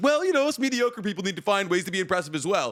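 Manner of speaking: mock abruptly brightened, chipper, perked-up delivery. Retelling an anime scene, imitating Zonka perking up. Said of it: "perks up out of nowhere and he's like".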